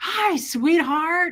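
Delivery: raspy, loud voice. Retelling a dream in which Fred greets the speaker: Fred's raspy loud voice. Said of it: "I heard his raspy, loud voice".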